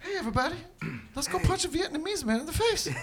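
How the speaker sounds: put-on very high-pitched half-whisper with a Boston accent. A group trading impressions, one introducing himself as a celebrity: Mark Wahlberg Boston impression. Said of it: "Can you guys do Boston?".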